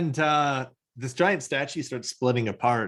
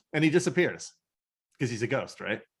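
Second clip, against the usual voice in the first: plain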